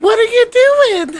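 put-on very high, loud twelve-year-old girl voice. Describing how a woman now sounds, doing a twelve-year-old voice. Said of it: "now she's like this 12-year-old".

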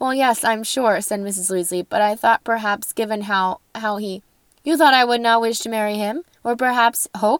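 ordinary delivery

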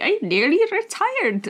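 very high, swooping put-on Irish accent. Retelling what a man said to them, Irish accent. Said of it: "I don't know why I went Irish there".

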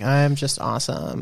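soft, whiny, put-on influencer voice. A speaker mocks how Instagram influencers talk: whiny Instagram influencer voice. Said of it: "the whiny voice when I do Instagram".

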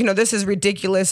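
put-on, dead serious tone. Retelling a son's YouTube video: imitating someone dead serious. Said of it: "He's dead serious".

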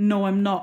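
very loud, mock furious outburst. Retelling how Caleb angrily denied being an addict: imitating an angry reply. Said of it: "looked at me super angry and was like".

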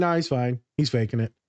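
normal talking voice

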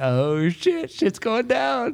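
very high, thrilled, drawn-out swooping exclamation. Retelling how the speaker's sister reacted, imitating her sounding excited. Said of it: "She's like all excited".

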